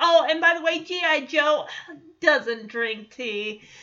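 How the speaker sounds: sassy, attitude-filled delivery.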